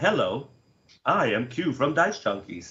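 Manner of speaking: bad, put-on robot machine voice. Joking around, the speaker does a bad AI impression. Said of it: "I just want to do a bad A I impression".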